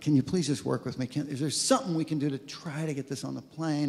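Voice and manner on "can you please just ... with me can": ordinary delivery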